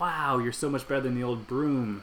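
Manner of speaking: ordinary talk, nothing marked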